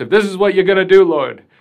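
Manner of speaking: shrill, booming, high, loud comic pleading voice. Quoting Moses complaining to God: Mel Brooks impersonation. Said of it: "that's my Mel Brooks impersonation".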